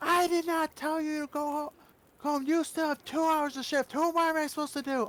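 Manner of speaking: play-acted, very high, stumbling yell. Retelling how a manager rushed outside yelling: imitating someone yelling. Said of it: "starts yelling, going".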